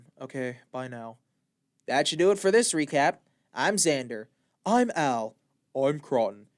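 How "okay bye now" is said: flat, low, very quiet monotone drone. Ending the recap bit, the host speaks as the character mm, in a monotone. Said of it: "And now I'm back to monotone".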